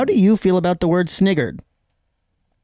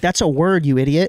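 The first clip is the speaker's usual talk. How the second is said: ordinary delivery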